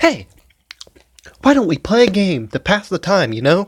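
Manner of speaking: high, wide, mock chirpy girl voice.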